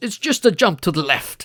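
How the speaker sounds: really posh upper-class British voice. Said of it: "in a really posh British voice".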